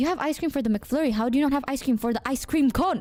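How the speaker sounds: usual speaking voice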